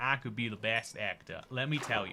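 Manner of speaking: put-on American accent. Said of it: "with my great American accent".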